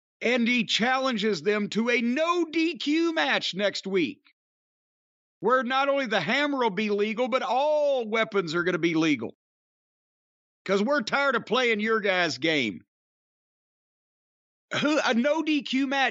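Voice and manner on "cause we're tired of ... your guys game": normal talking voice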